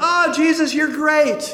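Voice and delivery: very high, loud, excited and joyful cry. Telling how the healed man came back praising God: retelling loud joyful praise. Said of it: "he came back praising God with a loud voice".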